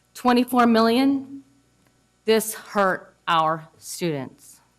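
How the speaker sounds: very emotional, voice barely holding together. Speaking in a meeting about school closures hurting students: very emotional. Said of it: "Sorry, very emotional".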